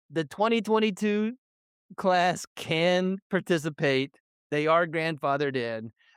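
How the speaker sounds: ordinary delivery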